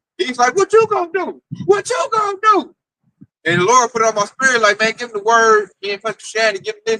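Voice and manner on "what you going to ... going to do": very high, shrill, panicked, freaking out. Retelling what a man said to him: retelling someone freaking out. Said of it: "he's freaking out".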